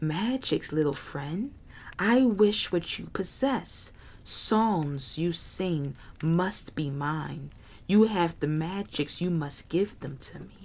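hissing, sibilant reptilian lizard creature voice. A narrator voices the Melrit answering Jerry, Melrit hissing. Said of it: "the Melrit hissed".

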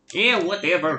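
put-on Scottish accent, rolled out. Answering a taunt aimed at Shrek: Shrek voice with Scottish accent. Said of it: "I need to work on my Scottish accent".

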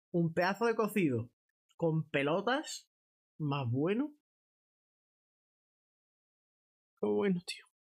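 speaking through a mouthful. Streamer describes the food while eating on stream: talking with mouth full. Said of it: "que hable con la boca llena".

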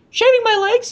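very high-pitched character voice, pitched way up. Reading a story aloud, voicing Robin's line in a high-pitched Robin voice. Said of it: "high-pitch that one".

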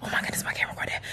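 quick, quiet whisper.

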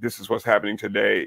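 put-on deep-voiced news announcer voice. Imitating the voice from a news intro: deep news announcer voice. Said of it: "the voice, the deep voice, sounds like James Earl Jones".

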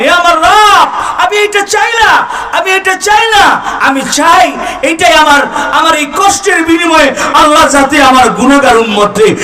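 wailing delivery.

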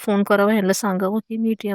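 ordinary delivery

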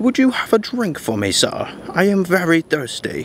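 proper British speech. Retelling a man asking the speaker for a drink, proper British accent. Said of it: "talking in like a proper British accent".

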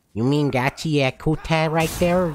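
put-on southern Canadian voice. Correcting someone's pronunciation of an anime title, in a southern Canadian accent. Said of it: "turn to like southern fucking Canadian".

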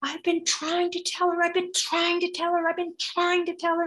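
put-on very high, wailing, screaming baby voice. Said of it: "baby is screaming".

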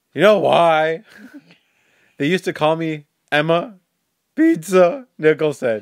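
high, loud, passionate, impassioned, voice cracking. You repeat the funny thing she said with so much passion, imitating her passionate, cracking voice. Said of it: "how much passion she had in her voice".

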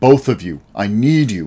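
ordinary delivery, nothing marked

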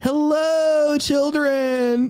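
very high cartoon voice with long-drawn hello. Describing a character from South Park, in a South Park camp counselor impression. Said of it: "he's like".

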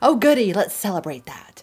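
loud, swooping, sarcastic mock cheer. A speaker talking about things falling apart reacts, sarcastic. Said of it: "There's sarcasm".

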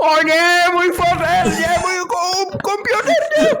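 very high, slow, anguished wail like a kettle screaming.

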